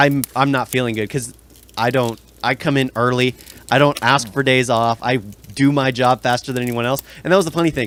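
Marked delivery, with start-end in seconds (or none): none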